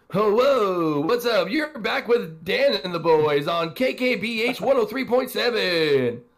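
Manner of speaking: very high, loud, corny cheesy DJ radio patter. A podcast host opens the episode for listeners, cheesy radio voice. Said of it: "channel my inner radio voice".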